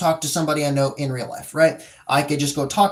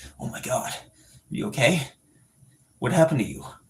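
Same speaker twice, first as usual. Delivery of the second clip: slightly deepened, grave, serious anime hero voice; 3 semitones lower, 3 dB quieter than usual. Explaining how everyone has an anime voice, delivering a serious line in it. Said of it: "it becomes their anime voice".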